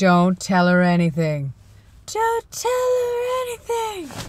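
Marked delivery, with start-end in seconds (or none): 2.1-4.1 very high pitch that swings up and down. Talking to viewers, doing a Gingerbread Man impression. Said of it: "impression of the gingerbread man".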